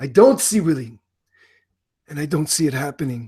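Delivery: put-on Italian gangster accent. Host on the [name] Show giving a championship prediction, in an Italian mobster accent. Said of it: "Now I sound like an Italian mobster".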